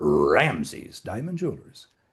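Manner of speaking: very low, deep, hammy cartoon mascot voice. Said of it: "really bad imitation of Tony the Tiger".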